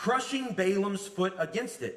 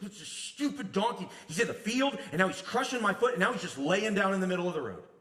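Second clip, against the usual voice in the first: ordinary talk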